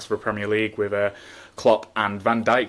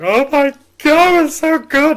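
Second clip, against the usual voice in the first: very high, loud, shrill, drawn-out fake sobbing wail; 10 dB louder than usual. Imagining the two of them crying over the football: mock crying. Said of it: "it would have just been us two crying, going".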